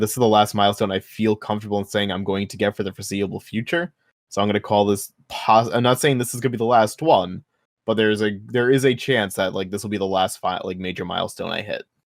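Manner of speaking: ordinary talk, nothing marked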